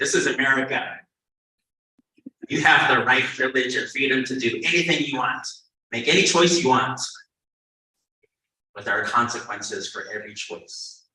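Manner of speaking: mock sarcastic, loud stock-phrase delivery. Retelling a saying told to the kids in class: retelling own sarcastic saying. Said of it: "I say that to them sarcastically".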